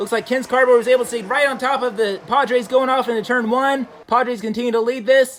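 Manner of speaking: high, loud, climbing, thrilled race call.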